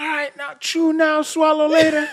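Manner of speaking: mock high-pitched, shrill, barked drill-instructor holler. Retelling what the big one in the military said at meals: imitating someone yelling. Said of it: "that big one yelling".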